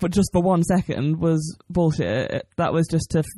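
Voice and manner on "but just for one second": normal talking voice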